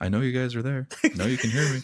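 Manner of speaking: high, distant voice, as over a radio. Narrating a voice heard from a dropped comm pad: faint voice. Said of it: "just a faint hello".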